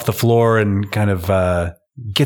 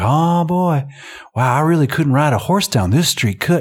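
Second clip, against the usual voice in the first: laid-on-thick put-on Southern cowboy accent, over the top, pitched up; 6 semitones higher than usual. Retelling a man's over-the-top act as a country boy: over-the-top Southern guy routine. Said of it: "sinking his teeth into this Southern guy routine".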